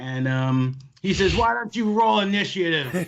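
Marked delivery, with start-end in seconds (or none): 1.4-2.9 yelling, much higher pitch. Voicing a character who answers a threat of a fight, yelling. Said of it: "He yells that".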